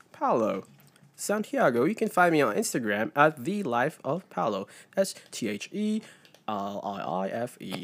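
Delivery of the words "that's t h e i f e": low, soft, fake put-on English accent. One of the hosts spelling out his Instagram handle, with a fake English accent. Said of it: "You spelled it with an accent".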